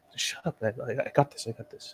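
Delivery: put-on whisper. Retelling how Marcus whispers back to Zidane: retold whisper. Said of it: "Marcus is like".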